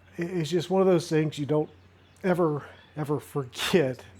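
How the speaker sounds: heartfelt, emotional, visibly moved. Recalling an unforgettable day on the Saint Johns River: emotional. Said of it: "I'm getting emotional just thinking about it".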